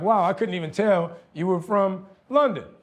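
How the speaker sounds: ordinary talk, nothing marked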